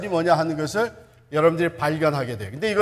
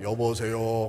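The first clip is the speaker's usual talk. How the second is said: reverent, solemn, pious pastor voice; 8 semitones lower, 8 dB quieter than usual. A friend answers the phone showing off being a pastor, holy-sounding voice. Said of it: "거룩한 목소리로".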